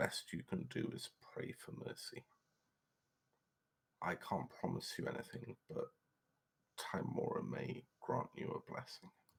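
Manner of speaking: quiet whispering. Roleplay character leaning in close to another character, whispering in her ear. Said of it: "I'll just lean in and whisper in her ear".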